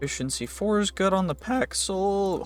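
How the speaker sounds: voice cracking and breaking mid-sentence. Going over item enchantments, the speaker's voice cracks mid-sentence. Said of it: "Holy voice crack".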